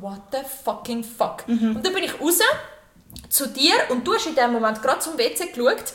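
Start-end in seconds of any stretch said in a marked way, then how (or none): 0.0-1.5 mock-shocked, much quieter. Retelling seeing a man standing in the doorway, acting out a shocked exclamation. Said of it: "retelling shock at naked man in doorway".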